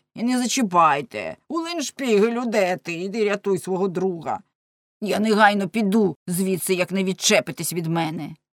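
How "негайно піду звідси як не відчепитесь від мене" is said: ordinary delivery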